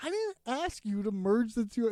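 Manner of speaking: plain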